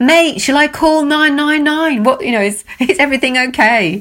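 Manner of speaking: put-on high shout. Retelling how someone on a bridge called down to their boat, imitating someone shouting down. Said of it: "shouted down".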